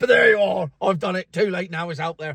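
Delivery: ordinary delivery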